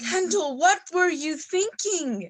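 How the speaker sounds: yelling. Confronting kendall after hearing that kendall withdrew, yelling. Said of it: "Why are you yelling at me?".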